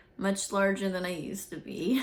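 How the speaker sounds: plain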